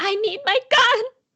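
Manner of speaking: high-pitched, sudden shout in character voice. Playing a character who sits up and demands a gun: yelling in character. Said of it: "Jennifer sits up and yells".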